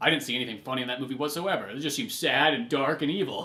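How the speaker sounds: normal talking voice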